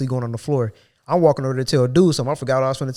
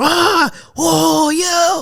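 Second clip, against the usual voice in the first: very high, loud, pained yelling; 5 dB louder than usual. Retelling what a coworker does, imitating him yelling as if in pain. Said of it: "yelling like you in pain over there".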